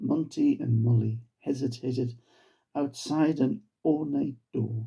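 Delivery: ordinary delivery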